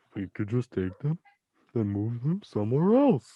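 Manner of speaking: silly, goofy put-on cartoon starfish character voice. Quoting the SpongeBob strategy in a first-ever Patrick Star impression. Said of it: "I've never done a Patrick impression".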